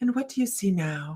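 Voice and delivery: soft, hushed, trance-guiding hypnotist voice. Retelling questioning a hypnotized woman, in a hypnosis voice. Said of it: "in your hypnosis voice".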